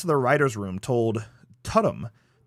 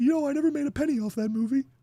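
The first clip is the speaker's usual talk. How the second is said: very high upper-register voice; 13 semitones higher than usual. Acting out Ed answering the nurse at the end, in an Ed Gein voice in upper register. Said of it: "he's in his upper register".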